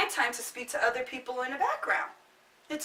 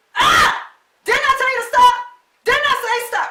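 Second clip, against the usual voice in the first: shrill, very high, very loud scolding yell; 11 semitones higher, 13 dB louder than usual. Showing listeners how they act on the phone with their kids, imitating a parent yelling. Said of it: "let me show you how y'all be".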